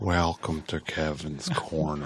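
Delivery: slow, stretched-out, milked, drawn-out delivery. Showing how to draw out the Kevin's Corner line: drawn-out Kevin impression. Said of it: "Draw it out".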